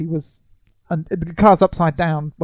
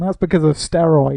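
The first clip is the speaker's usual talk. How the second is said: plain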